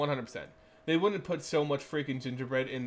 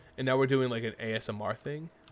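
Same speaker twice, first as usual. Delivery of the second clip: usual speaking voice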